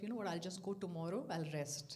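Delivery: ordinary delivery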